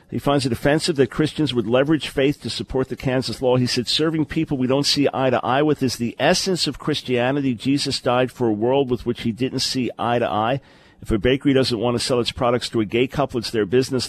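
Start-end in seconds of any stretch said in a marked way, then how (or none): none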